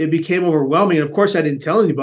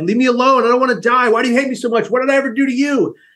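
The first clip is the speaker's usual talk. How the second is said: acted, high, tearful, sobbing, pleading yelling; 8 semitones higher than usual. Retelling yelling at the voices in the head on a crowded bus: retelling crying and yelling. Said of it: "I'm crying like a baby and I'm yelling aloud".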